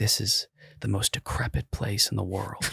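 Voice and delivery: breathy, hushed whisper. Imitating travel vloggers visiting a poor county, mock whispered voice. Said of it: "talk in, like, a whispered voice".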